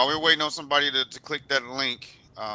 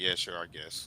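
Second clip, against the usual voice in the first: mock unconvincing, half-hearted tone, much quieter, lower; 7 semitones lower, 10 dB quieter than usual. Mocking a man's reply to his audience, the speaker imitates an unconvincing answer. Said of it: "that don't sound convincing".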